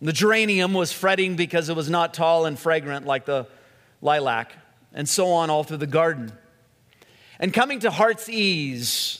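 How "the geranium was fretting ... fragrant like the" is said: plain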